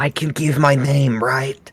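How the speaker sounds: slow, half-whispered, quiet delivery. Asked their name, the speaker turns to the others, half-whispering. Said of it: "I'm gonna whisper to the others".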